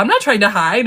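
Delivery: ordinary talk, nothing marked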